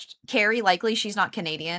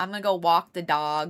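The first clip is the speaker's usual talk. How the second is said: put-on New Jersey accent, pitched lower; 3 semitones lower than usual. Describing her mod's accent, imitating Kayla's New Jersey accent. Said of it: "She's got that New Jersey accent".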